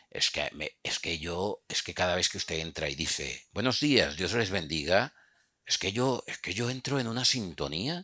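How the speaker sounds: put-on Castilian Spanish accent. Retelling what a cameraman told the speaker, in an imitated Spain Spanish accent. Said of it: "disculpa que a- a- imite el acento español".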